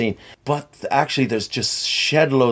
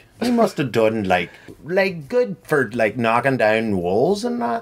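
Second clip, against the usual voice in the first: put-on Northern Irish accent impression. Talking about hearing a Northern Irish man, in a Northern Irish accent. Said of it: "That's my Northern Irish accent".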